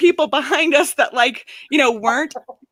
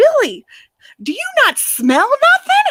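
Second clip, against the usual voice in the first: mock old woman freaking out, very high, swooping; 10 semitones higher than usual. Retelling what Nana said to Billy, imitating Nana flipping out. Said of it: "Nana's flipping it like".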